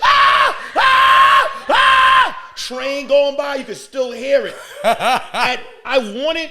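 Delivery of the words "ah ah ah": very high, loud, long drawn-out screaming ahs. Retelling hearing a woman screaming, imitating a woman screaming. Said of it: "She's in there".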